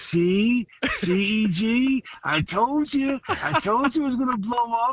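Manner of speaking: very high-pitched, unhurried, drawn-out voice. Retelling a former teammate's told-you-so: Frank Whitecheck voice. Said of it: "In that Frank Whitecheck voice".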